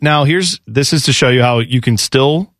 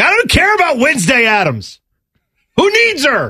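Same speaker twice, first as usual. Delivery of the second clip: put-on very high, shrill, swooping screaming rant; 12 semitones higher than usual. Imagining a future divorce court hearing, the speaker does pretend screaming. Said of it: "I'll be sitting there screaming like".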